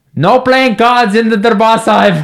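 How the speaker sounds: put-on slow, high, top-of-the-lungs booming shout. Telling how a man stood over the kids and boomed at them, retelling a booming shout. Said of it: "he boomed it at the top of his voice".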